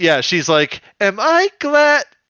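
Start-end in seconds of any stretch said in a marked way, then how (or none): 1.0-2.0 put-on very high, very loud, shrill, girly cheerful voice. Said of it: "in this like very girly, like cheerful voice".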